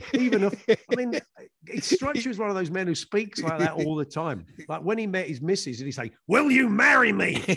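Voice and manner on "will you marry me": put-on aggressive man voice, much higher. Mocking a man who speaks aggressively, acting out his proposal, mock-aggressive. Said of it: "very, very aggressive in everything he says".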